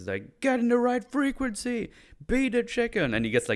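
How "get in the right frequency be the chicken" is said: barked yell, pitched very high. Retelling a scene where the guy yells at him: imitating someone yelling. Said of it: "he just starts getting yelled at by, uh, by the guy".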